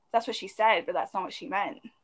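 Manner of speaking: ordinary talk, nothing marked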